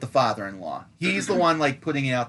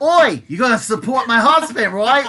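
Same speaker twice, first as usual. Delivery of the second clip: very high, very loud, shrill bad put-on Cockney accent; 10 semitones higher, 9 dB louder than usual. Retelling what a woman with a billy club said about her husband: cockney accent. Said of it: "Cockney, is that the accent?".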